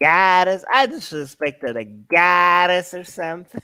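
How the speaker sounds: put-on Bronx accent. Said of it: "her accent on goddess".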